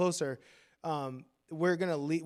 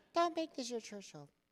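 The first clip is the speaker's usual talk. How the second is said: put-on little girly voice, higher and quieter; 8 semitones higher, 6 dB quieter than usual. Repeating a pastor's advice to a graduating student: Pastor Ken's little girly voice. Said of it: "he said it in that little girly voice of his".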